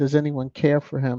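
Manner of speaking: normal talking voice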